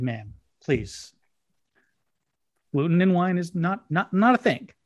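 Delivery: dry, dead-serious, no-nonsense deadpan. Retelling what was said to a customer, retelling own deadpan reply. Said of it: "I looked at her with a straight face and I said".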